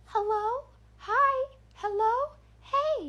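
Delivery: eerie doll voice, very high and very drawn out. Retelling the voice that circled the fence line, in a creepy doll voice. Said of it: "creepy doll voice floating around".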